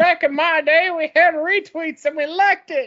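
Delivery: put-on elderly grandmother voice, pitched way up. Teasing someone about how they keep saying a word, doing an old grandmother voice. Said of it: "It's like that old grandmother type".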